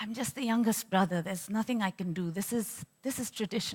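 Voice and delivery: resigned, quiet mutter, barely voiced. Recalling a father answering a mother's late-night plea, low muttering voice. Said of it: "in a low voice, muttering".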